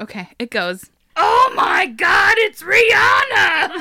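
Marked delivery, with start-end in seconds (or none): 1.2-3.8 overdone, high, slow, loud crying exclamation. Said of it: "He has to do it in this voice".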